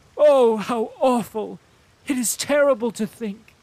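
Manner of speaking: shrill, very loud, very high cry of shocked horror. Reading a novel, Anna Mikhailovna reacts to news of the patient: exclaiming in shock. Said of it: "said Princess [name] to her son, / [name] is hoping that her son [name] will be able to convince the dying [name] Bezukhov to bless her / (closing words) I can just see them. Like, what is going to ha".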